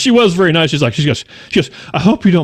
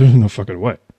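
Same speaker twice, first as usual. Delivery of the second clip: mock muttering under breath, lower pitch; 6 semitones lower than usual. Retelling a reaction to a stranger on a plane: muttering under breath. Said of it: "I said under my breath".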